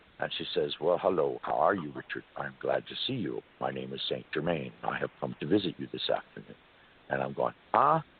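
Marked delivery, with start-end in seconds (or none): 0.8-6.6 woman dropping into a deep, low, man-like voice. Retelling a woman who rolls her eyes back and speaks as a man: woman talking like St. Germain. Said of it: "she starts talking like a man".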